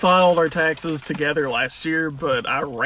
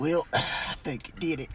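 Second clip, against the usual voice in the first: put-on breathy voice, quieter; 9 dB quieter than usual. Describing a ridiculous guy to a friend, imitating his breathy voice. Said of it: "he's got that breath to his voice".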